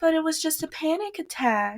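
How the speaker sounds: thin, very high voice, no bass. Retelling a scene, quoting Emma: imitating Emma with the bass gone from her voice. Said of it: "all of the bass is out of her voice".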